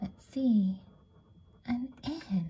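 very soft, gentle whisper.

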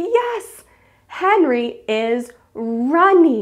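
drawn-out, slow, enthusiastic, excited teacher cheer. Showing how they'll answer the group's sentence, so excited praise. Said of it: "I'll be so excited and I'll say".

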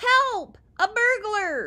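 very high, very loud shout. Waking to see a masked face, a man shouts for help, shouting. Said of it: "Godfrey shouted".

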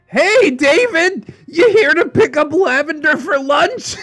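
put-on bright, cheery call-out, very high pitched. The narrator calls out to David as he steps in, cheerful yell. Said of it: "cheerily yelled".

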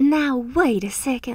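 put-on Southern belle voice. Speaker voicing the listener's part in a role-play: Southern belle accent. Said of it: "making you sound like a Southern belle".

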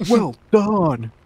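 loud passive-aggressive tone. Describing the game's radio voice lines, the speaker imitates one: mock passive-aggressive 'well done'. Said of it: "passive aggressive".

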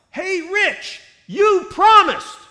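very loud, high, drawn-out yell. Retelling calling out to Rich walking past the sideline: retelling a yell. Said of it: "as I yelled".

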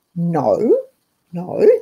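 stern, low voice with swooping pitch. Speaker answers an imagined objection to keeping a pantry, in a mother voice. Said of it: "that's my mother voice".

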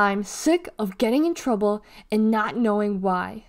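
plain

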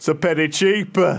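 put-on northern English accent. Retelling what a shop owner on TV answered, northern English accent. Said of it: "doing a northern accent".

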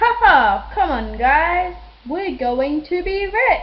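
mock, high, loud calling out through laughter. Calling the family after the first customer was willing to pay, high laughing voice. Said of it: "So I called my family with a high laughing pitch".

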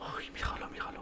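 soft, breathless, excited whisper.

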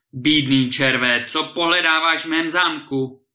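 loud, thundering roar like a giant. Narrator reading a giant who has just spotted a visitor in his castle, thundering. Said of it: "zahřímal".

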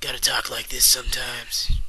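gruffer tough-guy put-on voice. Showing off different voices, the speaker demonstrates a tough, gruff voice. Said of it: "tougher, gruffer voice".

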